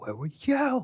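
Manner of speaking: play-acted, very high, shrill, angry yelling. Retelling how a dad yelled at Ben, imitating an angry yell. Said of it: "he yelled at Ben".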